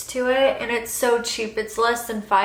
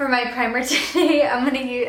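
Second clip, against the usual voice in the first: laughing, giggling through the words. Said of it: "I don't know why I'm laughing".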